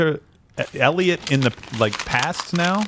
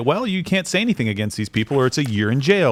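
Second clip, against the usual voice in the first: ordinary talk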